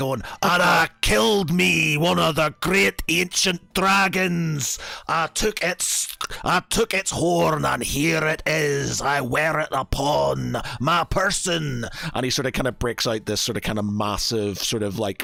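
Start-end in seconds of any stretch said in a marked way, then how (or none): 0.4-11.9 very slow, brash, swaggering dwarf voice. Narrating a dwarf overheard in a bar, use a brash dwarf voice. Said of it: "a very brash sounding sort of dwarf".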